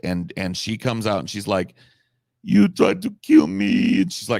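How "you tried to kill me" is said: play-acted very high, drawn-out tearful sobbing. Retelling a woman accusing a guest on a stream: imitating someone crying. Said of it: "crying and shit".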